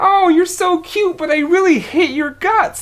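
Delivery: way up in a very high-pitched register. Showing how to deliver an insult in a very high voice. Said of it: "if I were to insult you in a very high and like very like".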